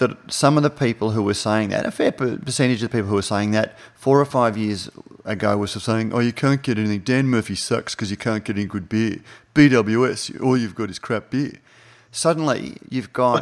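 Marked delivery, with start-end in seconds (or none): 6.1-11.5 put-on mocking idiot voice. Quoting people who complained years ago about beer choice, in a flog voice. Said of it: "but you use the flog voice".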